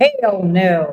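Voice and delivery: put-on just a slight touch of Texan accent. Speaker now living in texas says it with a slight texan accent. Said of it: "a little bit of a Texan accent".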